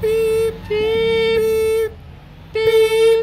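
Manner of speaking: loud beeping horn sounds.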